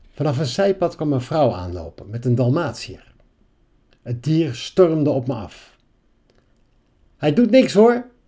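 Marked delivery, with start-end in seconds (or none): 7.2-8.0 very high, loud call from a distance. A woman whose Dalmatian runs at someone calls out from afar. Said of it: "riep ze al van verre".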